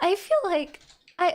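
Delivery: voice cracking. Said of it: "my voice cracked".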